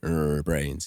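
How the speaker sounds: groaning undead voice. Playing a zombie version of a character, zombie voice. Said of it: "I'm zombie what if Captain America".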